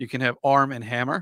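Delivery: American accent for show. Doing a line in American for the Americans in the room: American accent. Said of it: "I'm going to do it in American now".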